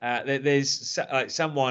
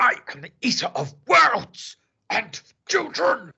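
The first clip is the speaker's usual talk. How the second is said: very high, swooping declaration; 11 semitones higher, 3 dB louder than usual. Quoting a film line and admitting the impression fails: Tim Curry impression. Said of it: "I can't do Tim Curry".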